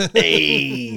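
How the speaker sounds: drawn-out, tongue-in-cheek "hey". Doing a quick impression after a joke about a film: Henry Winkler as Danny Zuko impression. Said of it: "That was my impression of".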